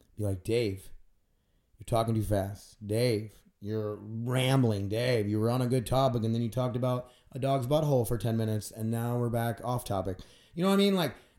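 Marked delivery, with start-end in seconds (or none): none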